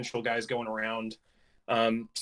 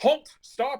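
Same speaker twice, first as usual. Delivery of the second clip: high, shouted voice; 4 dB louder than usual. Voicing one of the approaching riders as they near the players, shouting a command. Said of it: "you hear one of them shout out".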